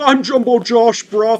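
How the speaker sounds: very high, very loud, shrill character voice. Doing the voice his twin brother does, Jumbo Josh voice. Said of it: "since I'm his twin, I can also do the voice".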